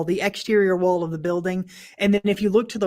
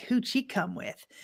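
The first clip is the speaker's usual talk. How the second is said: put-on breathy, whispered teenage voice; 4 semitones higher, 10 dB quieter than usual. Retelling what a recorded voice sounded like: imitating a teenager's voice. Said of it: "like this teenager's like".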